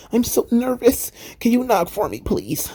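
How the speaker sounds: put-on high, whining little-boy voice. Retelling the scene where Nash Carter asks others to knock: whiny Nash Carter imitation. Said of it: "Came across like a, you know, a whiny little boy".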